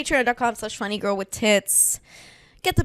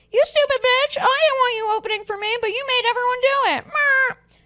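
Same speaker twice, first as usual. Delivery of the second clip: very high-pitched put-on voice; 3 dB louder than usual. Speaker acts out the headliner she wants to open for; impression of the headliner. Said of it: "now that I do her voice".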